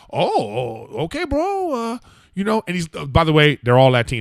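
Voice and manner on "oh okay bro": very high, swooping pitch, startled and surprised. Retelling a mover's reply to a coffee offer: imitating Angel sounding surprised. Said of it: "He got surprise in his voice".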